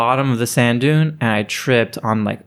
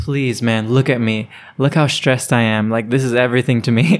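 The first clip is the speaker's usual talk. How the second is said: put-on pleading, begging voice. Retelling asking security guards to stay: retelling own begging. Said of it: "they left after I begged them".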